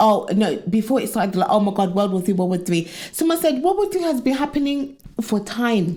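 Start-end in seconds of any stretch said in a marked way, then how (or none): none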